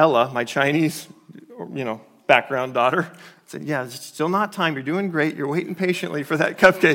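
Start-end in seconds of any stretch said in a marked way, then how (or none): 3.6-7.0 snide, sarcastic put-on praise. A parent retells what they said to their adopted daughter Ella; retelling a sarcastic, snide remark. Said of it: "being sarcastic and snide".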